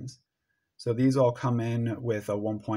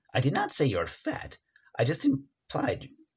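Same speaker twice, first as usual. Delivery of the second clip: swooping put-on cartoon skeleton character voice; 3 semitones higher than usual. Retrying a line for a skeleton character, in skeleton voice. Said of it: "So we need our skeleton voice".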